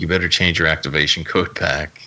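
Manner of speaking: ordinary delivery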